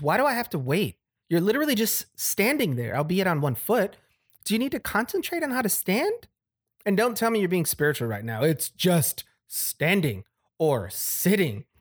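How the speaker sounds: exasperated, baffled outburst. Narrator reads a husband's words to Nate, who makes him wait; frustrated and confused, raised voice.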